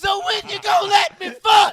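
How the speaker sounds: very loud, very high, shrill screaming. Retelling a guy on the phone late at night with a girl: imitating really loud screaming. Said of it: "Like real loud".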